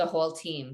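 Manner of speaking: ordinary talk, nothing marked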